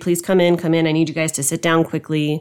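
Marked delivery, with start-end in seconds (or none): none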